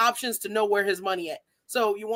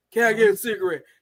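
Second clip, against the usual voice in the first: put-on begging, pleading voice, louder; 2 semitones lower, 5 dB louder than usual. Retelling how men approach asking for things: imitating a man begging. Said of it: "it's asking me for some shit".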